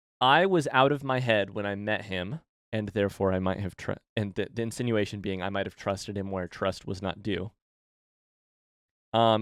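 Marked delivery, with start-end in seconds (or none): none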